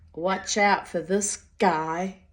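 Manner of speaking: put-on line spoken in an American accent. Retelling Richie's warning about another man, in Richie's American accent. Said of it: "in his American accent".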